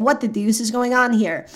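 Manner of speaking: ordinary delivery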